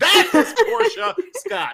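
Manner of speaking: very high, crazed cheering shout, swooping scream. Picturing cheering from the front row at a festival: imitating screaming fans. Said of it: "as we're screaming like crazy".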